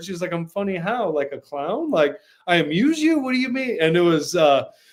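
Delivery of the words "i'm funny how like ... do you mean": put-on unsure, self-doubting, insecure girl's voice. Retelling a film school scene where a date turns insecure: imitating an insecure girl. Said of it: "she got really insecure".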